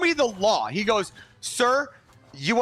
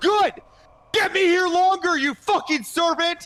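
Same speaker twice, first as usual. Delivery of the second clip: mock high, raised yelling shout; 7 semitones higher than usual. Retelling an argument with a cop: imitating himself yelling. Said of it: "Now I'm yelling at this cop".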